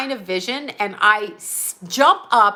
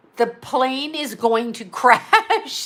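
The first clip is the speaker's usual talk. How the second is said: normal talking voice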